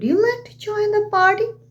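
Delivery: voice climbing in pitch through party. Showing how a question sounds: rising intonation on 'party'. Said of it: "That means my voice is rising here".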